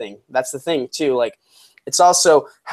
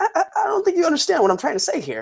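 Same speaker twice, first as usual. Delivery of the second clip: very high voice swooping up and down; 3 dB quieter than usual. Show how he was talking when you first get introduced to him: high-pitched Jon Bernthal imitation. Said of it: "he was talking like high pitched".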